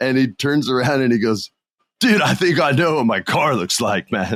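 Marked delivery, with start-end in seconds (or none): 2.0-4.4 classic beach surfer dude voice. Retelling what a young surfer said by the car: imitating a surfer dude voice. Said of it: "his voice is so awesome".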